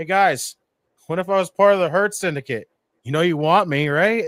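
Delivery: casual, offhand, relaxed put-on voice. Imitating MJF sending a recorded message to the guys: imitating MJF. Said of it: "just sat there and been like".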